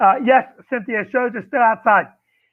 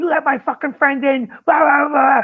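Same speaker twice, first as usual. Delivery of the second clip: put-on angry screaming, higher pitched; 4 semitones higher than usual. Retelling how Mark Price got in the speaker's face: imitating screaming. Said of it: "And he's screaming at me".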